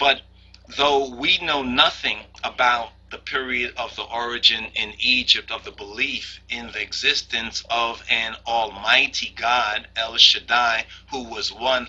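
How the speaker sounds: ordinary talk, nothing marked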